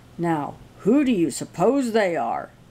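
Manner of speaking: grumpy, grouchy grumbling tone. Reading a story aloud, Papa speaks while looking out the window, grumpy tone. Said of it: "he added in a grumpy tone of voice".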